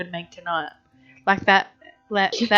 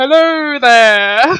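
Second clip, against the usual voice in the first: loud, boomed-out voice; 4 semitones higher, 11 dB louder than usual. Retelling how George and Jerry make belly buttons talk: Seinfeld belly button voice. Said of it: "the voice from Seinfeld when they're making, like, their belly buttons talk".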